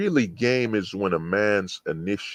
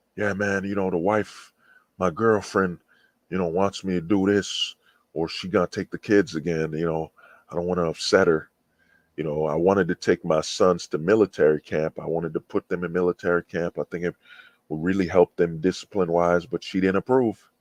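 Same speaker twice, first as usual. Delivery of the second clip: plain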